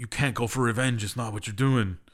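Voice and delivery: ordinary delivery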